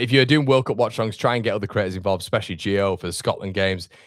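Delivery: ordinary talk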